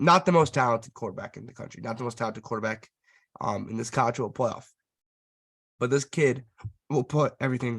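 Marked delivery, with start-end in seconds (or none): 5.8-7.8 emotional, choked-up voice on the verge of breaking. Speaker praises a college quarterback they admire, voice almost cracking. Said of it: "my voice almost just cracked right there".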